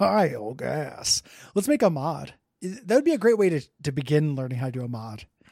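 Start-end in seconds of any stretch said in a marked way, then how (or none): 0.0-1.2 creaky video game announcer cadence. Repeating a name after being told it sounded like a game announcer: Binding of Isaac "bad gas" cadence. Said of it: "You said that like the Binding of Isaac says bad gas".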